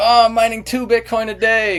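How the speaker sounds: play-acted, overdone, sarcastic bragging tone, very high. Speaker recalls what they said in their YouTube video, retelling a sarcastic boast. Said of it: "being sarcastic".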